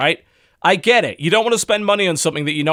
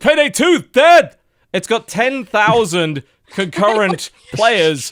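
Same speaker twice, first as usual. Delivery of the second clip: indignant, angry, high-pitched ranting; 5 semitones higher, 4 dB louder than usual. Speaker mimics people who call the game dead, in a mock-angry gamer voice. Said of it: "Your angry gamer voice".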